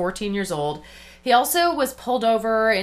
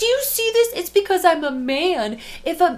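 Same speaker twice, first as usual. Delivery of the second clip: high-pitched mocking voice like a tattling kid. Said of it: "He's the telling on her, like".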